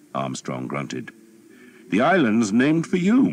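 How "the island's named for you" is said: smooth, offhand, glib tone, very high and raised. Narrating the Earl speaking to Armstrong at the head of the archers, glib. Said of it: "the Earl said glibly".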